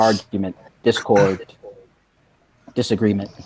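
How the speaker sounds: muttered quietly under the breath. Answering a side question in character: said under his breath. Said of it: "kind of say under his breath".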